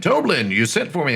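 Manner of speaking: distinctive, proper gentlemanly voice. Narrating a scene to the players, speak in Sildar's gentlemanly voice. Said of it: "very distinctive and um gentlemanly voice of Sildar".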